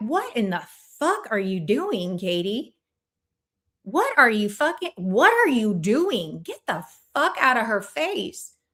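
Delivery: mock angry, pissed-off scolding tone. Imagining what people would say if the speaker acted that way: imitating pissed-off people. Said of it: "people would be so pissed".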